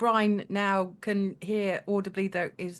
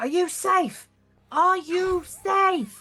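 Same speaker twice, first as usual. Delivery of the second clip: very high, shrill scream in a character voice; 10 semitones higher, 6 dB louder than usual. Playing a character who is still screaming: screaming in character. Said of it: "I'm I'm still screaming".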